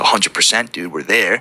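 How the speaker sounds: ordinary delivery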